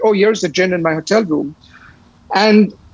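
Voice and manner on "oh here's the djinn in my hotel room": usual speaking voice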